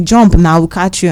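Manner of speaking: plain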